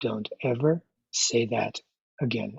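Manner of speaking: put-on cold, quiet, icy, final-sounding tone. Retelling the mother overhearing a sister's insult: imitating a very cold voice. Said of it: "a very cold voice said".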